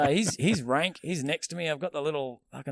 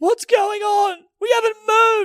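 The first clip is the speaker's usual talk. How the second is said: put-on tearful crying, higher and louder; 11 dB louder than usual. Retelling an old lady on a stopped train, imitating her crying. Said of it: "And she's crying".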